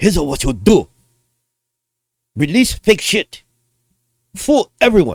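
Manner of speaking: clumsy, wandering, bad put-on Japanese accent. Speaker on a video redoes a quote after apologizing, in a bad japanese accent. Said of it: "I'm not very good at Japanese accents".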